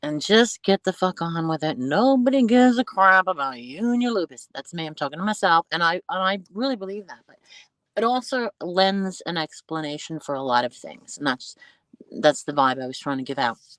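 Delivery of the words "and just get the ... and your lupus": put-on New Jersey accent. Talking to oneself about living with lupus, new jersey accent. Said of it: "in my best New Jersey accent".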